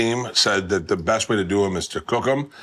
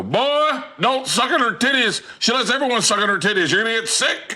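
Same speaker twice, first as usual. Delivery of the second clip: put-on very high-pitched, elderly old man voice; 14 semitones higher than usual. Retelling a remark overheard at a strip club: imitating an old man. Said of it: "I just heard an old man go".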